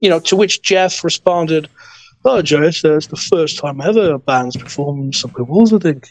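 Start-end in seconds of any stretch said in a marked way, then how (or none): 2.2-6.1 put-on Liverpool-style accent like 1960s pop band. Retelling what Jeff said after a show: imitating Jeff in a Beatle-like accent. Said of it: "Forgive my accent".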